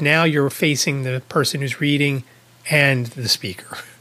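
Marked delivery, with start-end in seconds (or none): none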